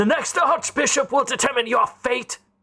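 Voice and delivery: high-pitched shouting. Voicing a guard in the towers refusing a visitor entry: guard shouting from the tower. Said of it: "the towers shouts".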